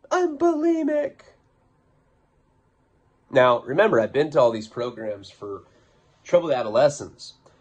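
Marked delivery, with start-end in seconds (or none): 0.1-1.2 play-acted very high, breaking, tearful wail. Retelling how a girl broke down during an argument: imitating someone crying. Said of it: "she just starts breaking down crying".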